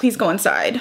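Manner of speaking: ordinary talk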